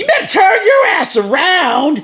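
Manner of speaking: very high, angry scolding voice. Retelling a downloaded voice setting on a friend's device, imitating an angry lady voice setting.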